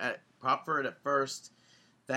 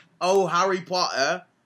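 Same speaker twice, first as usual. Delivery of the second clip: mock joking British accent, higher and louder; 4 semitones higher, 6 dB louder than usual. Retelling what bowlers in the next lane said: imitating a joking British accent. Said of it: "speaking with British accents as, like, a, a joke".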